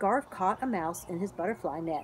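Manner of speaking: plain reading voice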